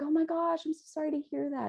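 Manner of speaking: high-pitched, fast, gushing sympathetic delivery.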